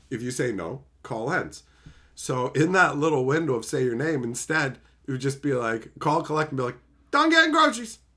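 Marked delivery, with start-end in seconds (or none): 7.1-7.9 rattled off very fast and very high. Showing how to say a fake name into a collect call: said really quickly. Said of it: "really quickly".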